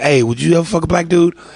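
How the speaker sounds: ordinary delivery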